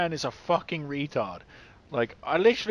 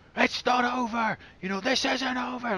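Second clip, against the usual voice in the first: put-on hollering at full volume in a high screaming voice; 8 semitones higher than usual. Retelling a show scene where one character screams at another: imitating Ward screaming. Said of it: "Ward's screaming at him".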